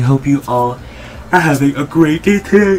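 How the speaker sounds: talking mid-yawn. Greeting viewers at the start of a channel video, yawning. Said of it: "I'm yawning".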